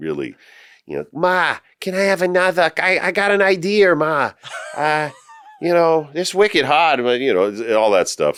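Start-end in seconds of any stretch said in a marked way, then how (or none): 1.1-7.0 very high, unhurried Massachusetts accent. Showing the Massachusetts accent from younger days: Massachusetts accent. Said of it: "we had this Massachusetts accent".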